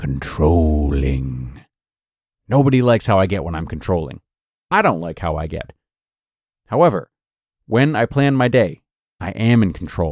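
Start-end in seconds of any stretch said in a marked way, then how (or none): 0.0-1.6 very low, slow, drawn-out menacing voice. Talking about becoming controlling, repeating the word in a slow menacing voice. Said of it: "Let's say that again in a slow and menacing voice".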